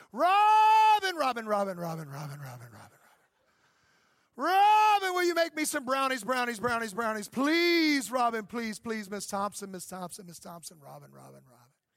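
loud, silly, sing-song, repetitive pleading. Acting out a conversation with his wife: silly repetitive pleading. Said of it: "imagine it like this if I was having a conversation with my wife".

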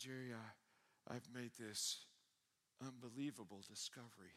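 slow, trembling, quivering voice, barely holding together. Retelling a friend's late-night phone call: retelling a quivering voice. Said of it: "And his voice was quivering".

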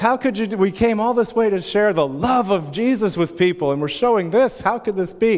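put-on upset yelling. Retelling how crying students yelled at Mac, retelling an upset yell. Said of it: "like yelling at Mac".

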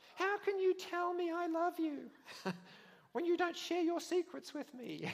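very high, sulky, pouting voice. Acting out a scripture scene, a woman complaining to a man: Delilah pouting. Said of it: "Then Delilah pouted".

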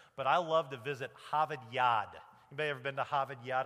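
not very good New England accent. Speaker telling the audience about a favorite place to visit, in an attempted new england accent. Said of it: "trying to do the whole New England accent thing".

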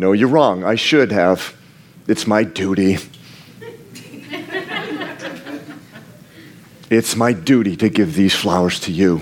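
very low, animated, swooping put-on voice. Acting out giving a wife flowers: acting out a deadpan reply. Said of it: "I respond with an expressionless face".

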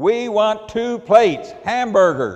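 high, very loud bellowed yell. Retelling how she yelled her order at the old man: retelling own yell. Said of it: "I yelled".

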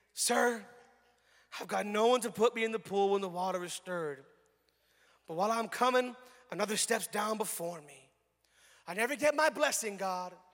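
low, mock poor-me victim voice. Speaker acts out the sick man's answer from the tape, put-on victim voice. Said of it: "he does the victim voice".

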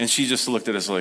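ordinary delivery

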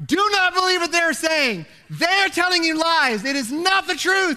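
put-on full-throated, top-of-the-lungs yell, pitched high. Retelling yelling across a store at the top of the lungs: retelling a yell at full volume. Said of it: "at the top of my lungs yelling".

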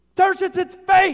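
booming, very loud, very high preacher-style yell. Imagining Paul dictating a letter to his scribe Tertius: Paul in preach mode. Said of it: "Paul gets into preach mode".

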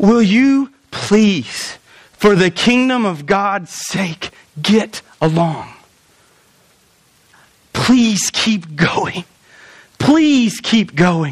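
slow, earnest, heartfelt, desperate pleading tone. Acting out how Paul begged the church: imitating Paul pleading loudly. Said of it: "I don't think that he wrote this quietly".

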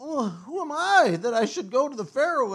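mock whiny, complaining voice, high and loud. Retelling Moses answering God, in a mock-whiny Moses voice. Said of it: "that's his whiny voice".

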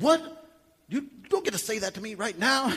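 put-on loud mad voice. Acting out a reply to a spouse's compliment, imitating being mad at it. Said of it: "mad at it".

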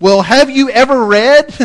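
loud, pointed, sarcastic delivery. Speaker retells Jesus answering people proud of knowing Scripture; retelling a sarcastic question. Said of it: "rather sarcastically".

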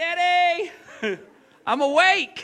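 mock, loud, very high-pitched toddler shout. A father describes his son waking him every morning, retelling his son's yell. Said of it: "He just yells".

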